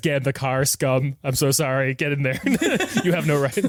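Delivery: tearful voice, talking through the tears. Acting out a man sending someone away through tears, mock crying while speaking. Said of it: "through the tears, he says".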